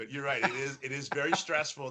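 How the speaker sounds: soft, talking through helpless laughter. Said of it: "I'm sorry I'm laughing".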